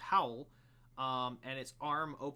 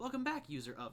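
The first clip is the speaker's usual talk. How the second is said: automated machine voice, higher; 12 semitones higher than usual. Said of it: "an automated voice say".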